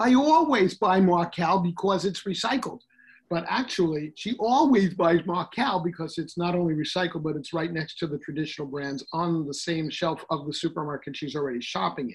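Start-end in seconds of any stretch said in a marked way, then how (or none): 0.0-2.8 put-on New York Queens accent. Retelling what the woman the speaker stayed with said: Queens accent. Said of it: "she says to me in her Queens accent".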